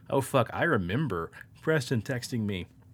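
ordinary talk, nothing marked

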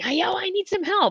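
very high-pitched, drawn-out, stretched scream. Retelling a lucid dream, calling for help: imitating his own scream. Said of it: "I really loudly in my dream, I'm screaming".

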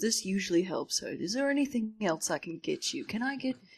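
put-on Georgian Southern US accent. Retelling what a man on a plane said to a sick passenger: Georgian accent. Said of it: "He had the Georgian accent".

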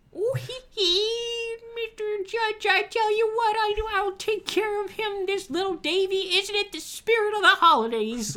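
very high squeaky oddball voice, "hee" stretched out. Retelling how Whitey speaks up to the judge: squeaky Adam Sandler Whitey voice. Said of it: "very clearly the old squeaky weirdo Adam Sandler voice".

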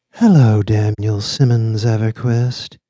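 casual, velvety, projected DJ on-air voice. The lips on the screen greet daniel simmons everquist, in a casual, velvety radio-dj voice. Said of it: "the casual, velvety voice like that of a female radio stream DJ".

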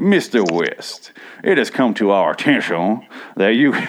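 put-on Southern attorney accent. Retelling how someone read a lawyer's email aloud, in a Southern lawyer accent. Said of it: "an 11 minute rant in a Southern lawyer accent".

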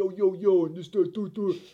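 put-on loud, high, heavy Italian-American accent, laid on. Retelling how people mocked the speaker's accent, doing a Rocky-esque accent. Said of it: "it always gravitated towards a very Rocky-esque".

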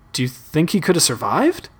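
plain

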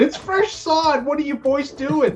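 high, slow, panicked wailing voice.

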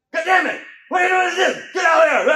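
very high, loud, blustering tough-guy shout. Speaker retells shouting at someone banging on the gate, trying to sound tough. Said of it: "I was trying to sound tough".

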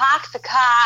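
awkward attempt at a New York accent. Trying a New York accent, admitting it turns out weird; attempted New York accent. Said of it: "I cannot do a New York accent. I can try".

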